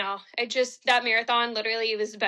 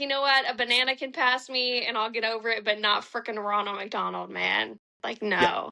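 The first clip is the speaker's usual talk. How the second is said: plain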